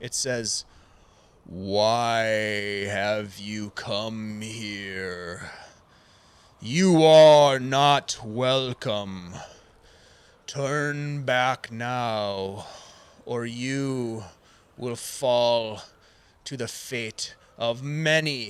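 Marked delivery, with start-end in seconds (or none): 1.4-18.5 very slow, drawn-out voice, stretched-out why. Narrator voicing a being that speaks inside the listeners' heads, booming voice. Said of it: "you hear a booming voice in your head".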